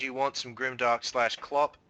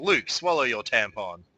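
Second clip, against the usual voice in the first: usual speaking voice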